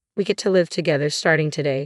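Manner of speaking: ordinary delivery, nothing marked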